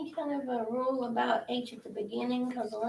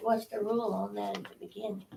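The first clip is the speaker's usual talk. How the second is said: usual speaking voice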